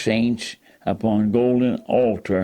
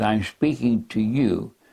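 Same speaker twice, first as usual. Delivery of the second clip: normal talking voice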